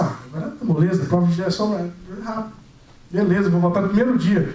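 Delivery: ordinary talk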